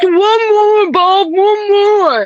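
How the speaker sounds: play-acted very high, very slow mouth-full mumbling. Retelling how Tom begged for more food: imitating mumbling with food in mouth. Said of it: "mumbling with food in his mouth".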